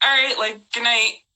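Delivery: ordinary delivery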